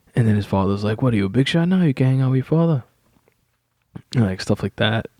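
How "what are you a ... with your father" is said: put-on thick, heavy Italian accent in a dad voice. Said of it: "a heavy Italian accent for his father".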